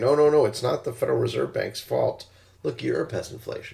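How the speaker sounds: ordinary talk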